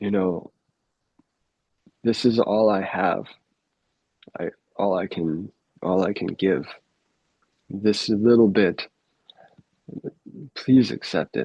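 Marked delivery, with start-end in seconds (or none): 2.0-11.5 put-on tearful, choked-up voice, catching. Retelling a sadhu's words as he offered his little bit: imitating a choked-up plea. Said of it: "he'd choke up".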